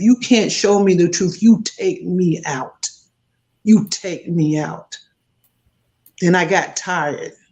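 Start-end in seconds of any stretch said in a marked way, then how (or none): 0.0-5.0 angry, crying, insistent, tearful delivery. Retelling an angry, tearful demand to god: retelling angry tearful demand. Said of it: "I kept saying that until I was tired".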